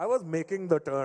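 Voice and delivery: imitated heavy Indian accent. Retelling how he wound up his father after a car breakdown, imitating dad's thick indian accent. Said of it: "how thick my dad's Indian accent was".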